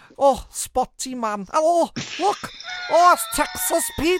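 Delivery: very high, thick, swooping North Welsh accent. After another speaker mentions a show, the speaker answers in a thick North Welsh accent. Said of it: "in a really thick Northwellian accent".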